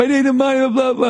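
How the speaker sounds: overblown yelling, shrill and very high. Telling a story, acting out a man yelling that he needs money: retelling an over-the-top yell. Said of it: "as he's yelling over the top".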